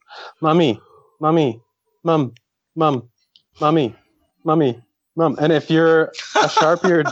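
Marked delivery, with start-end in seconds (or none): 0.4-5.3 insistent, repetitive, pestering nagging. Retelling a show scene of a child waking his mom: imitating Stewie nagging his mom. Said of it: "the exact same thing as Stewie when he's waking up his mom".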